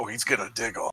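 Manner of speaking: clown voice, dirty and cigar-smoking. Answering whether the character will diggle: like a dirty cigar-smoking clown. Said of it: "Why'd you say it like a dirty cigar smoking clown?".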